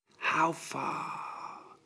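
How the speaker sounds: whispering. Horus asks his physician, whispered. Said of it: "whispered Horus".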